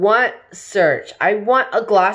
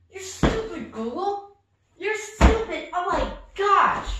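furious, angry, fed-up, exasperated tone; 9 semitones higher, 6 dB quieter than usual. Scolding a voice assistant that won't turn on the TV: furious at the assistant. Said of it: "I'm so pissed".

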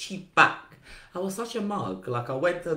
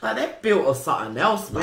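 plain

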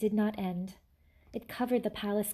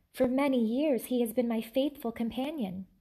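usual speaking voice

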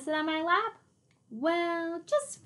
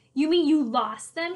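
loud, raised, shouted line; 3 semitones higher, 8 dB louder than usual. Narrator reads one character's reply to another, shouted. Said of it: "shouted D.W.?".

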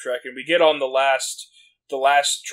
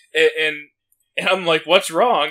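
plain

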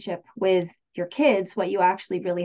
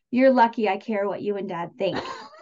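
mock-disdainful tone. A mother retells her high-school son's remark, in a mock-disdainful tone. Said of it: "with some disdain actually in his voice".

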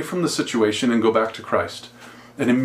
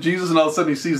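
usual speaking voice

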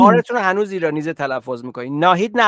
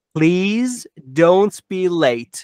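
slow, unhurried delivery. Teaching people a sentence to repeat, said slowly. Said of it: "Go slowly like this".

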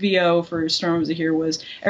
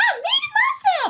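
very high, squeaky cartoon robot voice. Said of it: "go-to voice to practice was Gur from Invader Zim".

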